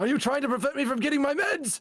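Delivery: very high, put-on old man voice. Showing off a great old man voice in a playful bit: old man voice. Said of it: "he thinks I have a great old man voice".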